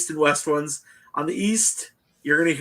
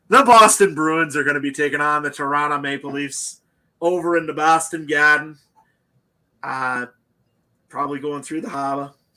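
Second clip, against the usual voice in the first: bad, fake, put-on Boston accent. Previewing the Bruins versus Maple Leafs series: put-on Boston accent. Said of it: "I'll stop my Boston accents".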